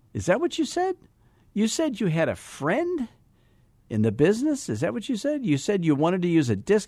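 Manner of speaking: very high, swooping, disbelieving incredulous tone. Questioning someone about what they said, in a can't-believe-you-said-that tone. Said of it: "I can't believe you said that tone in your voice".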